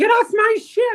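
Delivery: very high, squeaky voice. Retelling how Captain Minnie kicks guests off the ship: imitating Captain Minnie. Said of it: "And then she's like".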